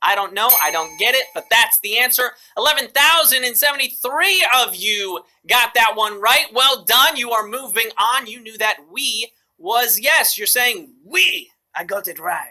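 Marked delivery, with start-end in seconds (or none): 10.4-11.5 put-on French accent on English. A quiz host reveals the answer to the players, in a french accent. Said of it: "That was my French accent".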